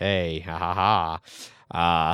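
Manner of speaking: low, very slow, dragged-out laughing drawl. Imitating a friend's reaction while thanking a supporter: Jeff impression. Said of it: "that was a spot on Jeff impression".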